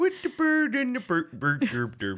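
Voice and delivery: very high, loud, swooping, bouncy gibberish babble. Speaker breaks off a tongue twister into a Swedish Chef gibberish voice. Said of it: "Why does that sound like the Swedish chef?".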